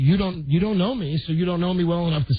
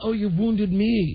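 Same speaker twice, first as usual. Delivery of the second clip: mock wounded whine, higher pitched; 4 semitones higher than usual. Imitating the engineer walking by the broken monitor with a hangdog look: imitating Tony sounding wounded. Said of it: "with a hangdog look, looking right in there like".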